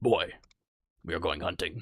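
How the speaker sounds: low, deep character voice, announcer style. Imitating a video game dad talking to his son: Kratos voice. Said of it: "every time he just goes".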